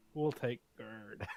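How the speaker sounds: sorrowful tone. In a tabletop game, a character looking longingly at something, sad voice. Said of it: "Why did you sound so sad?".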